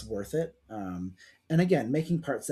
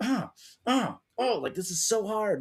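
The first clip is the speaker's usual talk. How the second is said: pitched very high, heaving and straining with effort; 9 semitones higher than usual. Retelling a speed build on camera with hard-to-join bricks: imitating own straining effort. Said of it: "using so much more strength".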